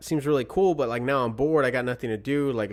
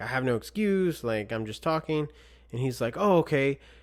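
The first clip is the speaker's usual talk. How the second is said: ordinary talk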